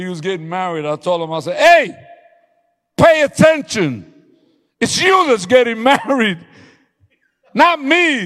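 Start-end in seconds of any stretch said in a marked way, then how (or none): 1.6-8.3 booming, shrill, very loud, high drawn-out yell. A pastor retells what he told a man who was getting married: retelling a yell. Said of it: "why are you yelling".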